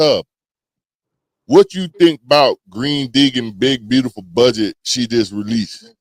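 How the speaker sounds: low, deep, bassy male voice. Voicing D, putting a question to Tub: deep bassy man's voice for D. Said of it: "why are you giving D a deep, bassy man's voice".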